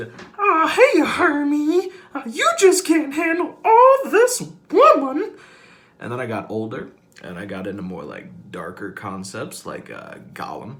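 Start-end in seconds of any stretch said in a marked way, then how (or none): 0.4-5.3 shrill puppet-pig voice, very high and very loud. Showing off voices learned growing up, doing a Miss Piggy impression. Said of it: "even Miss Piggy".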